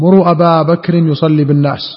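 ordinary talk

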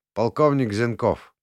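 ordinary delivery

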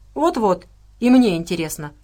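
ordinary delivery

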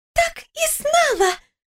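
very high, delighted, joyful shout. A woman on the phone cuts her lover off, joyful shout. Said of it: "радостно прокричала она в трубку".

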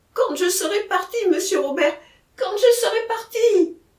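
high, exclaimed crying out. Narrator reads Jacquemin speaking to monsieur Robert, cried out. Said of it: "S'écria Jacquemin".

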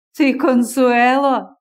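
laughing while exclaiming. Listener reacting to the name she gives herself, exclaiming with a laugh. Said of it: "вигукнув зі сміхом Зденко".

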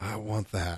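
soft, murmured under the breath. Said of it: "the wife whispers under her breath".

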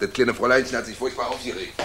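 plain reading voice

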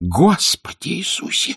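gasped-out exclamation, pitched very high. A narrator reads the nanny's reaction on hearing who the woman is: gasping. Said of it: "ахнула мамушка".

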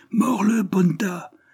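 shrill, very high, crowd-like yelling. Voices from the crowded hall call to their favorite, shouting. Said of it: "crièrent d'autres voix".

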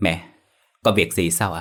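ordinary delivery

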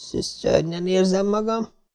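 groaning with a heavy tongue. Diana sinks back into her chair, groaning and slurring. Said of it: "nyögte nehezen forgó nyelven".

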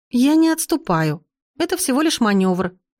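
defensive, high voice. Accused by her grandmother of retreating, a young woman tries to justify herself. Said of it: "попыталась оправдаться я".

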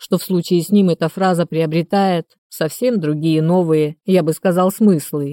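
plain reading voice

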